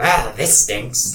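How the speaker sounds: put-on kobold creature voice. Playing a kobold character, repeating the line: kobold voice. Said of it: "Sorry, I forgot".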